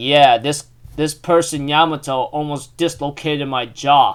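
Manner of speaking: normal talking voice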